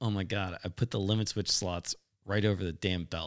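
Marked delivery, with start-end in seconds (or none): none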